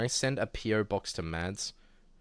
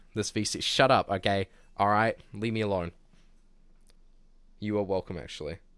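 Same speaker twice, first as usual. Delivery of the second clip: ordinary talk, nothing marked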